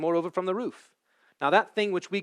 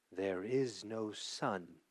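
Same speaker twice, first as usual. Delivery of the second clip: hushed, very low, very soft, drawn-out witch voice; 8 semitones lower, 13 dB quieter than usual. Narrator reads the witch repeating her words, in a softer and deeper voice. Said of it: "in a softer and deeper voice".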